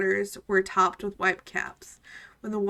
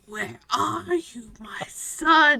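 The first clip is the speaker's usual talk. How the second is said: put-on very slow, creaky old woman voice, "son" drawn out; 4 semitones higher than usual. Reading a story aloud, voicing a blind old woman calling: creaky old woman voice. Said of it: "she would say in her creaky voice".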